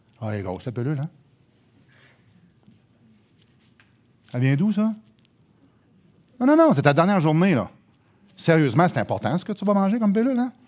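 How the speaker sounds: heavily sarcastic, needling, mocking tone. Speaker tells an audience about a dying man offered a cure, in a sarcastic voice. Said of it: "Lisez un petit peu le sarcasme dans ma voix".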